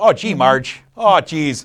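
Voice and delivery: slow, folksy, put-on small-town northern accent. Praising a crime film about small-town northern folk and its cast: northern accent. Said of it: "great northern accents".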